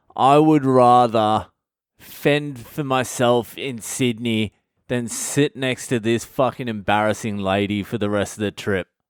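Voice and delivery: normal talking voice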